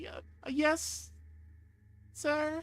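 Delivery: little, very high squeak through tears. Retelling a child answering the adult at the door, imitating a squeaky tearful child. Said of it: "Just like this little squeaking voice, like obviously through like tough tears".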